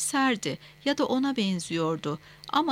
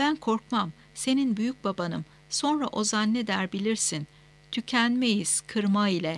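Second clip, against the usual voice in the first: usual speaking voice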